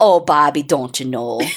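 deep, very low-pitched Minnesota accent. Asked to do an accent, performing a Minnesota accent. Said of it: "Can you do an accent? Minnesota".

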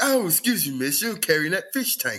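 mock proper, prim manner. Retelling a prank video about a guy approaching girls: imitating someone acting all proper. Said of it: "he was going around acting all proper".

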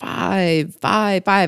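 put-on puppet vampire voice, kids'-show style. Counting up to number five on a list, the Count from Sesame Street voice.

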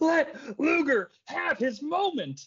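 mock very high, slow, drawn-out angry outburst. Retelling a wrestling match as Flair has a conniption fit. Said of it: "Flair breaks into ... a conniption fit".

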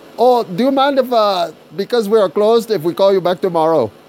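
put-on Indian accent. Retelling a phone call, quoting the man on the line in an Indian accent. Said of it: "dude with Indian accent gets back on the phone and says".

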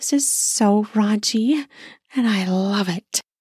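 breathy, sensual voice. Narrating a story, reading the narrator's own spoken line in a breathy, sensual voice. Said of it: "I said in a breathy, sensual voice".

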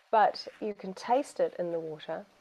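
normal talking voice

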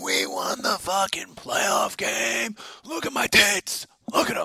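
put-on woman's voice, very high, loud screaming. Retelling a woman in a crowd screaming at people: imitating someone screaming. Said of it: "she was just screaming at people".

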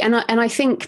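plain

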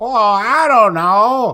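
squeaky, very drawn-out voice. Showing a friend an old impression: Tom Hanks impression. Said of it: "I used to have a Tom Hanks impression".

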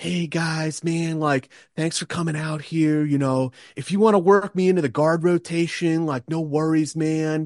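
easygoing, laid-back hippie voice, high. Describing a hippie-ish guy among the Rangers, cool hippie dude impression. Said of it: "like a hippie kind of like".

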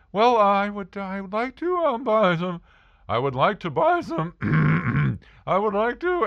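put-on nervous stammering. Retelling answering a man who asked to help, acting out nervous stammering. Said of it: "because I'm very nervous".

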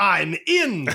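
put-on very loud, high, laid-on-thick Scottish accent. Acting out a foreign man on a date: exaggerated scottish accent. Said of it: "exaggerate even more his accent".

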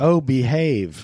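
put-on swinging British spy voice. Quoting a movie character while chatting: Austin Powers voice. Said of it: "are we gonna start the Austin Powers impressions now?".

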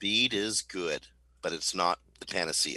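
slow, drawn-out, deliberate emphasis. Speaker stresses a point so everyone really understands it; slow and deliberate. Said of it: "I want to say this slowly".

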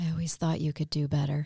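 low, sultry ladies' man delivery. Picturing how a guy would say it to her, imitating a sultry guy. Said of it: "sultry like that".

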